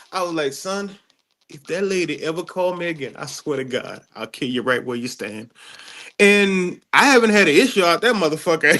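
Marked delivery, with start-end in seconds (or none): 0.5-5.5 hushed, creepiest, menacing voice. Speaker retells what he said to a boy, retelling in a creepy voice. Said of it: "in the creepiest voice ever".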